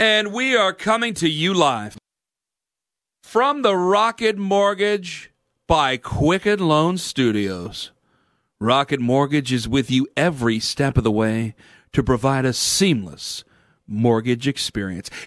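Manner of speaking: slow, careful, low, every syllable deliberately placed. Radio host reads a sponsor message on air, reading slowly and carefully. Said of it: "I had to read it slow".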